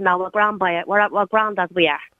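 ordinary talk

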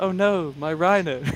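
mild, gentle, tender lamenting tone. Recalling how Tom reacted every time he lost a unit, imitating Tom's gentle voice. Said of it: "he just said in this gentle voice".

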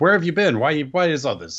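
high, loud, demanding voice.

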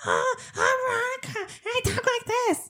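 high, whiny sing-song teasing, swooping and rising. Show how Kyle mimics you when you insist you don't sound like that, in Kyle's high-pitched mimicking voice. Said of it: "With that high-pitched voice".

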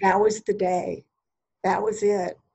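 moved, emotion rising, voice filling up. Remembering the day of graduating college, getting emotional. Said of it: "I'm getting emo-, emotional thinking about it".

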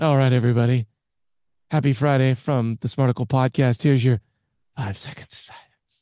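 creepy, unsettling put-on voice. Podcast host opens the friday show for his co-host in a creepy voice. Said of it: "everybody feels like they need to take a shower after that".

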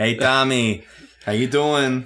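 put-on New York accent. Imitating the speaker's new york uncles, new york accent. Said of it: "None of my relatives talk like that".

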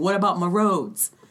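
ordinary delivery

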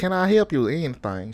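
put-on Southern country accent, played straight. Retelling going up to a girl and offering help, in a put-on accent. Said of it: "Why are you talking like that?".

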